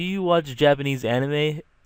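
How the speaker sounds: mumbled, awkward speech. Retelling a roommate's question, imitating an awkward mumble. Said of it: "In like a very mumbled".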